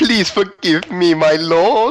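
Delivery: very high, loud groveling begging. A game master voicing a character after a diplomacy check, begging for forgiveness. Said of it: "starts begging your every move".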